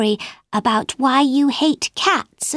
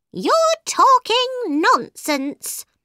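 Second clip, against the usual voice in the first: very high-pitched, furious, angry cry; 9 semitones higher than usual. The mouse, now very angry with Alice, retorts in a very angry cry. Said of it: "But the mouse was very angry now. / he cried".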